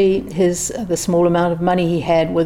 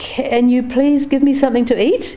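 stammering, much higher; 6 semitones higher than usual. A penniless narrator asks the restaurant staff for something to eat; stammering. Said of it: "I stammered".

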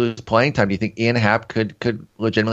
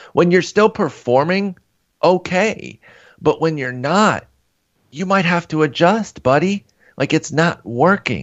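exasperated, frustrated, higher; 7 semitones higher than usual. Complaining about a hitter who won't shorten his swing, frustrated. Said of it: "you can hear the frustration in my voice".

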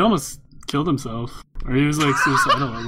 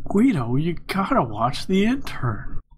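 very slow, unhurried, drawn-out celebrity-style delivery; 2 semitones higher than usual. Showing the others what a remembered actor sounds like: Owen Wilson voice. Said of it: "I remember what Owen Wilson sounds like".

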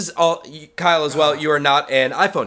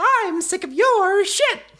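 very high little cartoon squeak. Showing how she might have said it: Mickey Mouse voice. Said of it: "That was actually a pretty good Mickey Mouse voice".

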